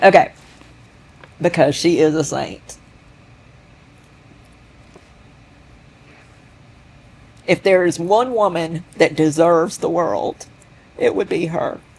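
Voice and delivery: tearful voice, crying while talking. Talking about own mother to another speaker, crying while talking. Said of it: "and now I am crying".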